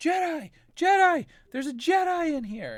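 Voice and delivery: shrill, very high, drawn-out yell. Voicing a gang member who spots a Jedi: yelling. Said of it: "you hear somebody yelling".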